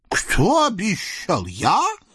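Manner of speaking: wholehearted, astonished, high swooping disbelief. The eastern tyrant replies to the scout's reminder, wholeheartedly astonished. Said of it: "от всего сердца изумился восточный тиран".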